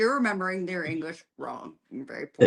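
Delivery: normal talking voice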